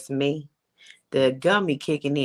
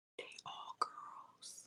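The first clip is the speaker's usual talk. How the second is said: very quiet, hushed whisper. Reacting to hearing the other speaker has four daughters: whispering. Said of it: "I had to whisper that to you".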